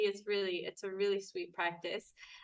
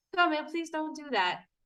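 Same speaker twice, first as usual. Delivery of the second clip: pitched-up, forced calm over boiling anger; 7 semitones higher than usual. Retelling own words to a partner who annoys: imitating a calm voice hiding anger. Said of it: "you feel like you're boiling inside, but your voice is like".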